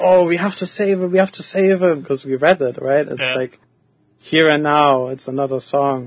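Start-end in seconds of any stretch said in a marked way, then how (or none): 0.0-2.0 frantic, going-wild excitement, high excited cry. Recalling how everyone reacted the first time they saw the Knight phase, retelling everyone going wild. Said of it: "going wild and being like".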